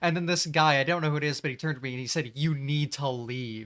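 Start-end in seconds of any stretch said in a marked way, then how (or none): 2.4-3.7 acted-out, slow, furious, very angry delivery. Retelling what a guy turned and said to her after a fight, mock-angry voice. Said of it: "like in this very angry, pissed voice".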